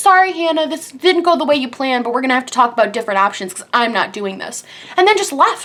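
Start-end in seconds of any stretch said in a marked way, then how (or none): 0.0-4.6 put-on yell, softened and toned down. Retelling how the dentist gave up mid-surgery: imitating the dentist yelling. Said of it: "he literally yelled at me".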